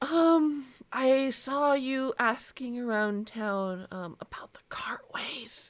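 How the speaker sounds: whispering nervously. Voicing a nervous girl approaching a player: whispering nervously. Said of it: "she whispers to you".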